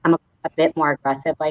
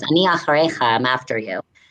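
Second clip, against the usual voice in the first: normal talking voice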